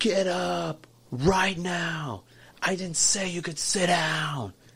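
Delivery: mock high, drawn-out, top-of-the-lungs furious scream. Retelling the moment he sat down in a booth, imitating a man's scream. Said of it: "this man screamed at the top of his lungs".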